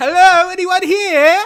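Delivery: shrill, very loud, high hollering. Calling into an open doorway to see if anyone is home: yelling. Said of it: "why are you yelling".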